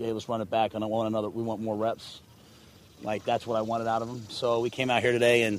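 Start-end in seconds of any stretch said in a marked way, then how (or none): none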